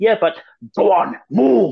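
urgent, pushing, high, loud, slow delivery.

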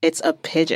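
mock flat, deadpan delivery. Discussing a Reichardt film, the speaker quotes a character, imitating a deadpan delivery. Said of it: "says this in deadpan".

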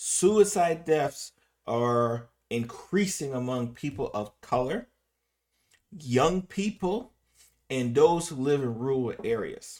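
slow, carefully spaced, deliberate delivery. Repeating a statistic to the audience so they can understand it, said slowly. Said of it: "say it slow so we can understand that".

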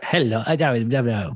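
very slow, drawn-out, low cartoon voice. Joking about Minions walking around, trying how they talk: Minion voice. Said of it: "What are they, what do they say?".

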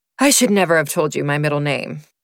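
plain

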